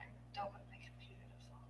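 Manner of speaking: very soft whisper, under the breath.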